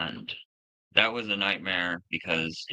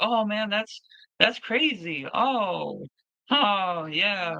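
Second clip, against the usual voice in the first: slow, very high, drawn-out feigned amazement, acted; 14 semitones higher than usual. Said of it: "we would just kind of be like".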